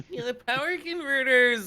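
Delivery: very high, loud, much whinier pleading voice. Repeating a quoted line after being told to say it whinier: mock-whiny voice. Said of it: "you have to say it in a much whinier voice".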